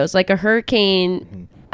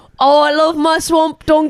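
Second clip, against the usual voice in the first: ogre voice, pitched a touch higher; 9 semitones higher, 4 dB louder than usual. Doing Shrek's line for the others: Shrek voice. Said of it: "Just find it with Shrek".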